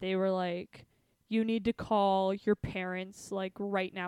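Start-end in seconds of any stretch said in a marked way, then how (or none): 1.3-4.1 imitated stern voice. Retelling how the cops told them to phone their parents: imitating stern cops. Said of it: "very stern".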